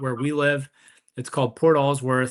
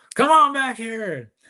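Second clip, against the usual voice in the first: put-on, high, hollering yell; 9 semitones higher, 4 dB louder than usual. Retelling a man who yells because he can't hear: imitating someone yelling. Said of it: "he kind of yells because he can't hear".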